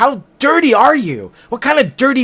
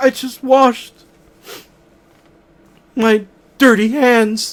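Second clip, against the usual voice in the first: sorrowful, sad, downcast, let-down delivery. Showing one sentence said different ways, now in a sad voice. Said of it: "I could do it in a sad way".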